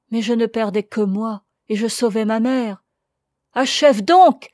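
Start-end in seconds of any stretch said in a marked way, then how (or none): 3.5-4.3 very loud, terrified outcry of dread. The narrator urges a woman to finish what she is saying, terrified cry. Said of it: "m'écriai-je, plein d'épouvante".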